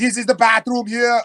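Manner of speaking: high-voiced big troll. Voicing the big troll Hans showing the bathroom: big troll Hans voice. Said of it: "So he's like".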